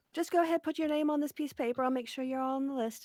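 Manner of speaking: light, sweet put-on Southern accent. Inviting a family to put their names on the list, in a little southern accent. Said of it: "with my little southern accent".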